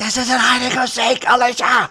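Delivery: put-on very loud whisper. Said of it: "a very loud whisper".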